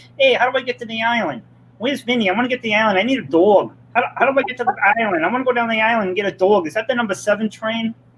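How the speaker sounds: teasing, high, rapid-fire voice. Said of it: "but I'll go like".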